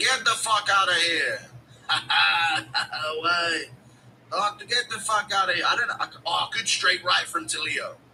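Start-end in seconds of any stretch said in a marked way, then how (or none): 0.0-5.6 slow character voice, every word drawn out. During fight commentary, speaker jokes about Ilya throwing someone out; Ilya impression. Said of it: "Impression of umpire Ilya".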